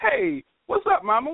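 acted-out awkward, uncool, very high-pitched voice. Recalling greeting a woman as she walked by; retelling a very uncool greeting. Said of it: "In the most non-coolest way you could".

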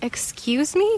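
whispering, offended. Narrator reads her own reply to another woman's theatrics, offended whisper. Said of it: "I whispered, offended".

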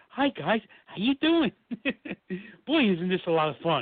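cheery nice-guy tone. Imitating the imposing actor once the cameras turned off: imitating a sweet friendly guy. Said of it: "the sweetest guy you could ever talk to".

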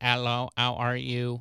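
slow, goofy computer text-to-speech robot voice. Recalling old computer voices, speaker imitates a goofy Microsoft robot voice. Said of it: "those goofy robot voices".

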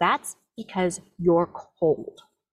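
horribly cold, icy, unfeeling delivery. Speaker retells what a woman said before putting them to bed; imitating a horrible, cold voice. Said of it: "She says with a really horrible, cold sounding voice".

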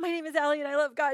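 put-on shy, giggling girl's voice. Retelling a young girl's words at her baptism: imitating a giggly girl. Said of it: "Like this, you know, she, like, covers her mouth, like, she just is giggly".

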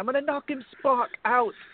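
put-on British accent, high. Quote what a man kept saying about a fight, in a put-on British accent. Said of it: "hear you with your British accent again".

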